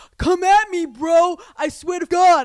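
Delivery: put-on very loud, very high shouting with New York accent. Retelling two men fighting behind the speaker: imitating New York yelling. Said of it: "full on New York yelling at each other".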